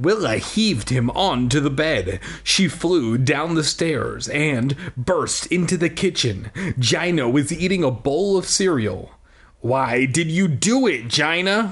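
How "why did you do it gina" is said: forceful, accusing, angry, insistent delivery. Willow bursts into the kitchen and confronts Gina at breakfast, demanding. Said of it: "Willow demanded, clenching her hands into tight fists".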